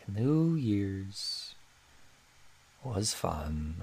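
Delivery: very slow, soft drawl, every word dragged out. On a podcast, showing the other host how Eeyore talks: slow Eeyore voice. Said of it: "Eeyore talks really slow. He's like".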